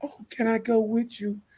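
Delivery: little lady's voice, very high. Retelling what the little lady said in a story, imitating a little lady. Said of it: "and then the little lady be like".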